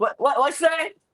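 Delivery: put-on high-pitched, confused, hard-of-hearing old man voice. Retelling how Tony acted when people whispered: imitating Tony as a hard-of-hearing old man. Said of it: "acting like the old man who just can't hear nothing".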